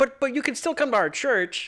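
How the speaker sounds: very high, sing-song, backpedaling clergyman voice.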